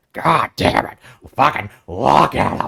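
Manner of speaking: put-on rough, creaky old-man voice. Imitating how Vince McMahon talked, the impression everybody does: Vince McMahon impression. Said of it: "impression that everybody does".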